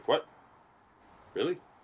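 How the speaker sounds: put-on surprised disbelief, incredulous. Acting out a man's reply on hearing the speaker is biking across the country, retelling surprised disbelief. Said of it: "cop surprised by cross-country bike trip".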